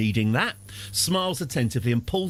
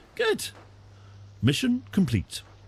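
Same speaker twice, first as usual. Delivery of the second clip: game announcer voice, high and swooping; 7 semitones higher than usual. Playing a strategy game, mimicking the guy from Red Alert. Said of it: "my impression of the guy from Red Alert".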